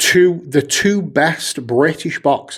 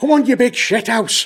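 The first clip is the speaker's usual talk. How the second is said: put-on Manchester accent, higher pitch; 10 semitones higher than usual. Taunting like the boxer calling out an opponent: Mancunian Tyson Fury impression. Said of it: "It wasn't Mancunian".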